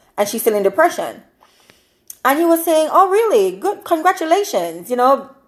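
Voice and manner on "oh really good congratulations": high, swooping, drawn-out sarcastic tone. Retelling a talk show host answering a caller: imitating a sarcastic remark. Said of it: "being sarcastic".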